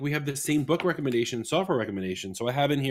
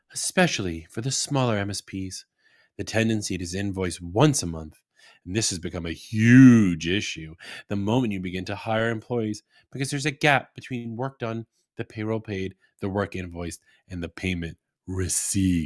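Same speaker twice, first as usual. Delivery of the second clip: low, sultry, seductive narrating voice; 5 semitones lower than usual. Host reading a business tip aloud as if a sultry sex story. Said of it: "I'm going to read this like as if it's a sultry sex story".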